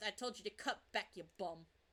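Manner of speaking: muttering under the breath. Voicing a character's remark about the old man, muttering under his breath. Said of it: "he's saying under his breath".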